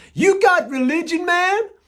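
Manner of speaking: fake American accent, very loud and high. Speaker retells a new friend's question to him, in a fake American accent. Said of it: "in this fake American accent".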